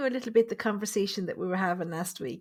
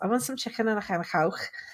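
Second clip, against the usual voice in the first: fast, comic put-on Liverpool Scouse accent. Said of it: "he does it like that, saying accents".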